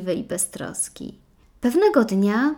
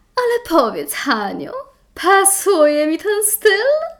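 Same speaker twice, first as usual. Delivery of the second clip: very high, swooping, playfully provocative, teasing tone; 9 semitones higher, 6 dB louder than usual. Tośka asks Hanka a question, teasingly. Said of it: "Zapytała przekornie Tośka".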